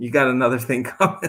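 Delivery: talking with giggles breaking in, laughing through words. Talking about what God created, laughing while talking. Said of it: "I'm sorry I'm laughing so much".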